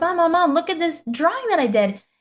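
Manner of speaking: put-on excited toddler voice. Acting out a two-year-old running into mom's office: acting out an excited two-year-old. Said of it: "really, really excited".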